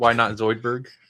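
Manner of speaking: plain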